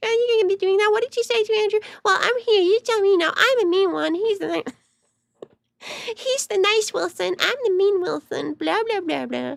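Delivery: annoying, squeaky, grating voice, pitched very high. Speaker mimics Rachel calling in to defend Andrew during a debate, in a Rachel Wilson voice. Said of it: "I apologize for the voice".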